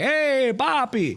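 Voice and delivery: very high, exaggerated, over-the-top Puerto Rican accent. Telling a story, imitating your grandfather greeting you: over-the-top Puerto Rican accent. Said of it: "the most over the top Puerto Rican voice".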